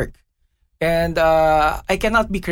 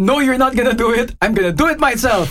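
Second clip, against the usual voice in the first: play-acted yelling, pitched up; 7 semitones higher, 4 dB louder than usual. Retelling what a housemate yelled at the door: imitating someone yelling. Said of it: "then he yells".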